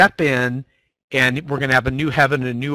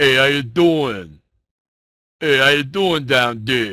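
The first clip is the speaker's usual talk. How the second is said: put-on New Jersey-style accent. Imagining atheists from new jersey, the speaker puts on a new jersey accent. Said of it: "if they're from New Jersey".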